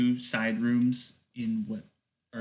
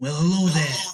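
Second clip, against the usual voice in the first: high, raised creature voice; 5 semitones higher, 6 dB louder than usual. Voicing a needle-toothed creature introducing itself to the players: voicing a spider-eel creature. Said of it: "it introduces itself".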